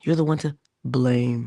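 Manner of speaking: ordinary delivery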